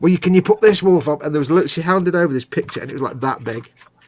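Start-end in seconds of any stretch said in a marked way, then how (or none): 0.0-1.2 put-on strong Manchester accent, much higher pitch. Retelling what a woman asked for, in a strong manchester accent. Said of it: "she had the strongest Manchester accent".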